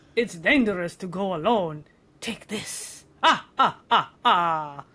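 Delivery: vampire character voice. Recording requested lines, the speaker reads one in a vampire voice. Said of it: "read them like the vampire of your choice".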